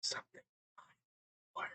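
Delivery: faint, very hushed, barely voiced whisper. Voicing a frightened survivor who meets the party: whispering in character. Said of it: "he's just in a very whisper voice".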